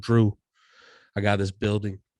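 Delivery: put-on heavy New York accent, laid on thick. Retelling what a small-town transplant from new york said to drew: thick new york accent. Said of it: "he had the thick New York accent".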